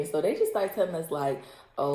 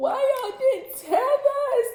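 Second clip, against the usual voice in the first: crying voice, higher and louder; 5 dB louder than usual. Retelling a friend bursting out crying during a drinking game: imitating Allie crying. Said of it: "Allie just bust out crying".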